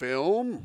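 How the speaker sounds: strange put-on alien voice, drawn out. Narrating a story scene, one line in a put-on alien voice. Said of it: "That's me doing an alien voice".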